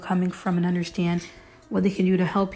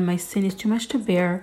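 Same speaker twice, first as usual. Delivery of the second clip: ordinary talk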